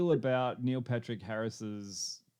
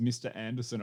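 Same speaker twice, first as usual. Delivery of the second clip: usual speaking voice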